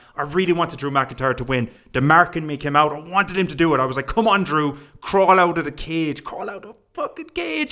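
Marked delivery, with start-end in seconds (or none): 4.1-7.7 mock keyed-up excited urging, swooping and rising pitch. Retelling watching a cage match escape: reenacting own excited screaming. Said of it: "I'm screaming".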